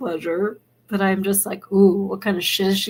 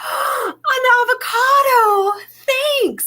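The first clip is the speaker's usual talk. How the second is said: put-on very high, thrilled, excited little child voice; 3 dB louder than usual. Retelling a video of a kid opening a Christmas gift: imitating an excited kid. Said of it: "he really is excited".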